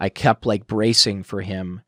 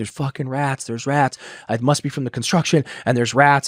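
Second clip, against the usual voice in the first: tearful, crying, panicked babble; 4 semitones higher than usual. Re-enact waking your sponsor by phone at three in the morning, retelling own crying. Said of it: "I'm crying and I'm like".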